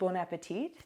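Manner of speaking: plain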